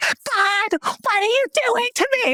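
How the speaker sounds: very high put-on scream.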